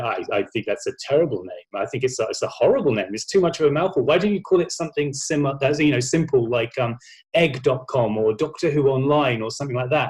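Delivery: ordinary delivery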